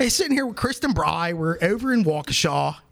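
high-pitched, put-on Pittsburgh accent. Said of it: "Do it again?".

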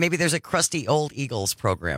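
ordinary delivery

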